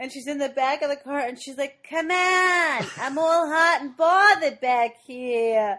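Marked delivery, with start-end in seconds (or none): 1.9-5.8 high, loud nasal nanny voice. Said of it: "the more the nanny voice comes out".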